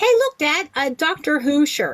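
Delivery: put-on high, tiny, small Scottish child's voice. Speaker retells a child behind him in the coffee line, tiny Scottish child's voice. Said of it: "I hear a tiny Scottish voice say".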